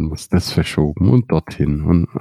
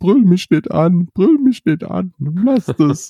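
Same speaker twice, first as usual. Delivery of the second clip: play-acted, very high, cheeky and half in tears. Retelling how a man reacted after being yelled at about his mask, mock half-crying, cheeky. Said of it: "dann wurde er fresh und halb weinend".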